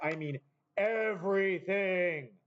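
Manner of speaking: grand, big, all-encompassing booming voice. Correcting Jedediah's answer about what he means, in a big, booming voice. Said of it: "Big, booming, everything voice".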